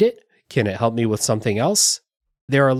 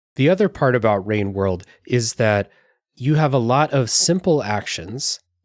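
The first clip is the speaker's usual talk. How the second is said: normal talking voice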